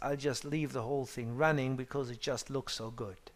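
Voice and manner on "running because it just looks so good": normal talking voice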